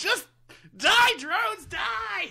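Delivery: mock, very high, shrill, loud screaming. Player recounting a video game match against enemy drones, retelling a scream. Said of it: "Sorry, I screamed that right into the phone".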